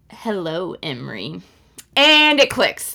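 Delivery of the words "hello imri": really creepy, eerie voice. Retelling a book scene where a cousin greets her: creepy voice. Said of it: "in a really creepy way".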